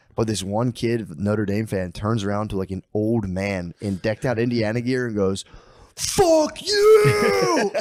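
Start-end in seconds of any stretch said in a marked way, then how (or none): 5.9-7.7 shrill, very high scream, "you" drawn out. Telling how a kid screamed at an old man at the game, retelling a scream. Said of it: "screamed at him".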